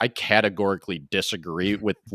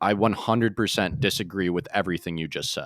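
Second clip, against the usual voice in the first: ordinary talk, nothing marked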